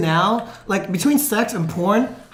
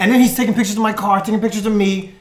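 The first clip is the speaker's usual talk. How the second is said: usual speaking voice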